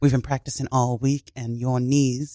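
soft put-on English accent. A speaker from Pittsburgh talks in an English accent. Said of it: "Why do you have an English accent?".

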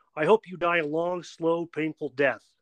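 mock yelling. Telling a joke, the speaker voices a wife yelling at her husband, retelling a yell. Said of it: "she yelled".

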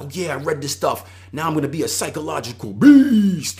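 pumped-up bragging.

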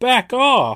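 high-pitched, loud yell. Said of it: "Larry keeps yelling".

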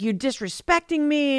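mock furious, angry, accusing tone. Retelling a show scene where a woman is mad: imitating Issa being angry. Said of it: "she's so mad at him".

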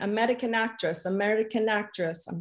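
vague, put-on Russian-ish accent. Retelling Pasha repeating himself to police at a traffic stop, Pasha impression, unsure accent. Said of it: "I don't know what accent I'm trying to do there".

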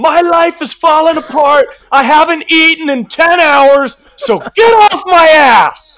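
very high, drawn-out, screamed outburst. Quoting a character's line from an episode: imitating Nick Rubenstein screaming. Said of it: "he screams".

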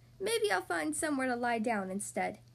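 ordinary delivery

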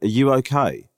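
put-on earnest concern. Retelling a phone call where someone asked if they were okay: imitating Lisa's serious question. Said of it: "not in a light-hearted, fun way".

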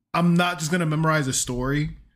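ordinary talk

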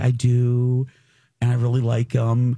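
put-on shy, girlish teenage girl voice. Retelling how Julia answered an audience question: imitating Julia, shy and girlish. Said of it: "She got all, like, shy, teenage girlish".

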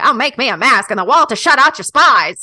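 loud mid-Atlantic transatlantic accent. Asked to read a poem's lines aloud in a put-on style: transatlantic accent.

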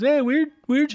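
put-on very high, bright, heavy Canadian accent. Play the two going door to door with a trailer, in a Canadian Jason and Ivan Reitman voice. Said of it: "I can give them Canadian voices".

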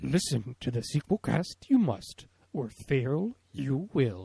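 slow, wise-sounding voice. Opening the show in a put-on voice: Yoda voice. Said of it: "it's hard in my voice to do that, Yoda".

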